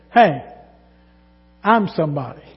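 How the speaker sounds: loud voice projected for the whole room. Retelling what a woman said aloud as she passed a pew, in a loud voice. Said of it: "in the same loud voice".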